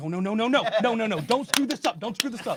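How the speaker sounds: mock, high, heated, angry protesting voice. Recounting what the other man yelled at him while getting angry: mock-angry shout. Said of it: "He's getting angry".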